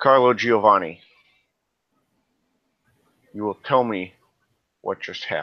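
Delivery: firm, commanding, assertive, no-nonsense tone. Narrating a scene, the speaker voices a man's demand in an assertive voice. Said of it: "assertive voice".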